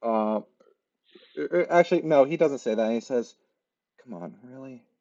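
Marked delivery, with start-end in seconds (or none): 4.0-4.8 hushed whisper, much quieter. Game master voicing a man who knows the player is faking, whispering. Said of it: "he knows you're completely faking and he just sort of briefly whispers".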